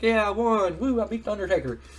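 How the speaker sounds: mock gleeful, high, happy celebrating whoop. Retelling a wrestling match where Dude Love beats the Undertaker: mock-celebrating as Dude Love. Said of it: "he's all happy and he's celebrating".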